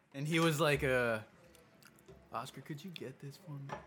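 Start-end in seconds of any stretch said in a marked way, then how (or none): 2.4-3.8 hushed, very soft, saddest-ever tone, acted out. Retelling how someone asked oscar to pay for pizza: imitating a sad plea. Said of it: "in the saddest face ever".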